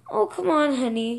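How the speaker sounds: ordinary delivery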